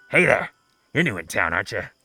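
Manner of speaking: fast, put-on kobold voice. Game master voices a kobold peering up through a sewer grate at a drow: kobold voice. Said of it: "a kobold is like peering up through the sewer up at you, and he says".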